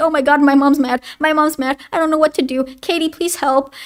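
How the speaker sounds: mock frightened, scared pleading tone. Retelling a friend shaking in fear: imitating a scared friend. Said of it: "already shaking in his shoes".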